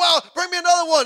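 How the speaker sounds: thrilled, excited, very high-pitched burst. Narrating a woman as the oil pours, imitating her all excited. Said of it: "And she's all excited".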